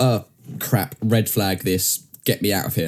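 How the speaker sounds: ordinary talk, nothing marked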